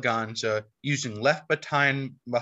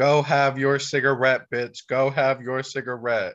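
ordinary delivery

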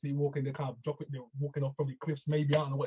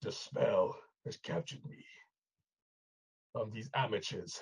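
low, breathy, slow delivery; 5 semitones lower, 5 dB quieter than usual. Imitating the Sandman's narration after being captured: deep Sandman voice. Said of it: "He's got, like, a deep voice".

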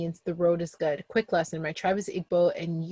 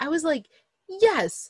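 ordinary talk

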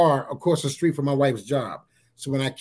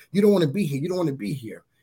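mocking, jeering, taunting demon voice. Retelling demons circling and speaking: imitating demons taunting. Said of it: "taunting me with this".

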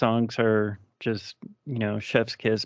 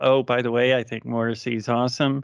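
usual speaking voice

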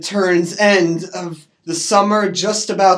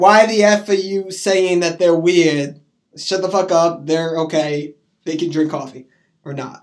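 normal talking voice

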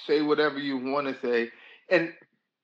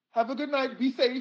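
much higher, polite, prim-sounding voice.

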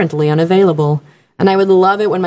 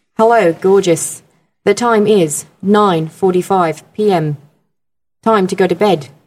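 put-on Australian male accent, voice-assistant style delivery. Asked to do a Siri voice, speaker quotes their iPad's Siri: Australian Siri voice. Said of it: "an Australian guy, and he goes".

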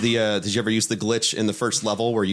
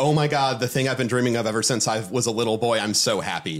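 ordinary talk, nothing marked

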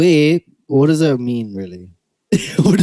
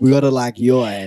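chatty, put-on South African accent. Teasing the other speaker by imitating them: mock South African accent. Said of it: "I do not sound like that".

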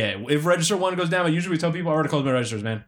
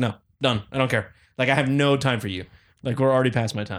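normal talking voice

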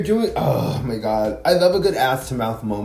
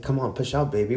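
put-on thick Puerto Rican accent, quieter; 4 dB quieter than usual. Retelling what a man urging her to push said, in a thick Puerto Rican accent. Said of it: "With his like thick Puerto Rican accent".

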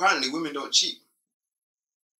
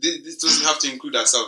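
ordinary talk

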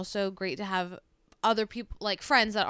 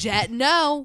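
very loud, full-throated shout; 4 semitones higher, 9 dB louder than usual. Mimicking the other person yelling from the other room, imitating someone yelling. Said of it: "you're just yelling".

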